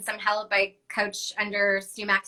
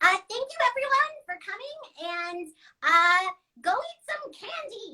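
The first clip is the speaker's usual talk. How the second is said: very high-pitched, slow unicorn voice; 11 semitones higher than usual. Asked to sign off the show in character, speaking as Gigi the unicorn. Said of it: "can you use the voice to sign off".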